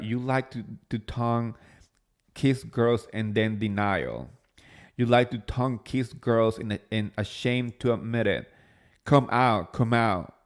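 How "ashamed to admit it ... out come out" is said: ordinary talk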